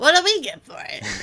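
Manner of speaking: high-pitched, loud goblin-style voice. Repeating the goblin Galabix's question from the game story: Galabix goblin voice. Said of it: "I know my goblin voice".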